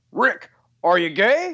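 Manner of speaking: slow, drawn-out, echoing broadcast-style voice. Retelling a live sign-off from a very tall colleague: imitating Gary's deep echoey voice. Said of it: "echoey, deep, deep voice".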